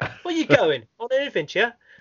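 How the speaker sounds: very high, exaggerated, over-the-top English accent. Describing a game where everybody talks English, English accent. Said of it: "Everybody talks like this".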